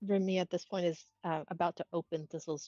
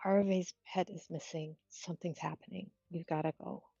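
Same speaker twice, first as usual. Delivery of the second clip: hushed, softly spoken, quiet acted voice; 5 dB quieter than usual. Voicing a character kneeling beside a waking companion: speaking quietly in character. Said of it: "says quietly".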